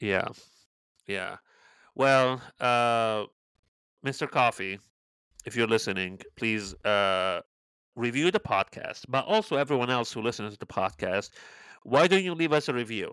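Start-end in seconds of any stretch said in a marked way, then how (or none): 11.8-13.1 pushy, combative, aggressive, confrontational tone. Asking podcast listeners to leave a review: aggressive. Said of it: "you sounded so aggressive saying".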